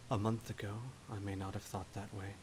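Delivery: very quiet, soft voice. Answering a challenge to her ruling, in character: speaking very quietly. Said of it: "very quietly says".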